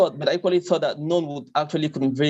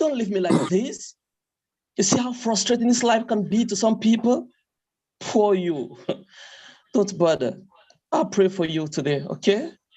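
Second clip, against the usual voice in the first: put-on British accent, higher; 6 semitones higher than usual. Performing a monologue for the British audience: British accent. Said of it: "you make me feel like somebody who's in Britain".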